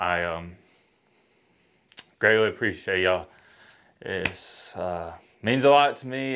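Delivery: heartfelt, emotional, very low voice. Thanking viewers for making the channel what it is, getting emotional. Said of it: "quit getting emotional".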